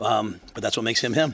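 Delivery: plain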